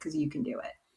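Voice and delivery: very quiet, soft, gentle, hushed delivery. Retelling an athlete's words said into the camera: imitating someone speaking softly. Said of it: "he said it so softly".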